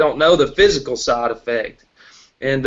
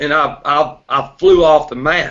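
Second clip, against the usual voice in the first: ordinary delivery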